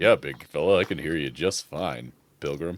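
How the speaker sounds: very low, deep cowboy voice. Answering a speaker who asks whether this thing is on, in a John Wayne voice. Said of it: "John Wayne?".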